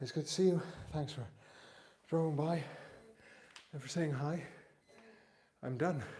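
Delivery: out of breath. Finishing a workout and greeting a visitor who dropped by, out of breath. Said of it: "Let me just catch my breath".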